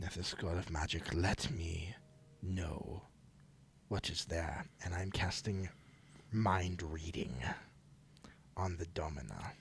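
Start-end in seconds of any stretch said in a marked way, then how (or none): 0.0-4.6 muttered quietly under the breath. Casting a spell stealthily in character, touching the head: quietly under the breath. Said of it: "quietly, you know, under my breath".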